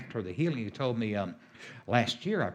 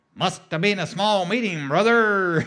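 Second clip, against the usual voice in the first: put-on loud, high, belted-out Texas accent; 7 semitones higher, 11 dB louder than usual. Retell a minister's reply about two meetings where every person was healed, in Andrew's Texas accent. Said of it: "And in that Texas accent".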